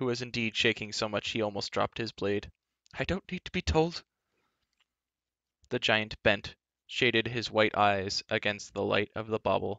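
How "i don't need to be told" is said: high, pitched-up voice, spoken half to himself. The bard answers the giant's cry to tremble; muttered. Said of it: "muttered the bard".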